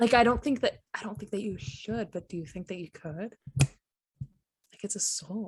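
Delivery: hushed, quiet talk under the breath. Speaking in character to Nell so others won't hear: talking quietly. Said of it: "I'm gonna try to talk quietly so nobody else can really hear".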